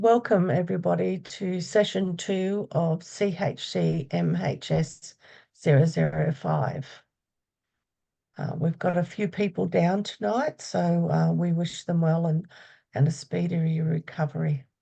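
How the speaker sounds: hoarse, worn, croaky voice, spoken slowly. Opening session two of the course while down with a cold, croaky voice. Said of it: "Please excuse my croaky voice tonight".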